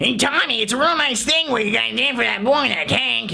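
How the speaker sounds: rough throaty voice kept high. Running through a movie's cast with impressions, speaker does a rough Nick Nolte voice. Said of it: "the rough voice Nolte".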